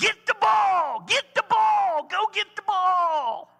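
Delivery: very loud, high, shrill screaming. Acting out a dad shouting from the side at a player, retelling a dad's screaming. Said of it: "Just screaming from the side".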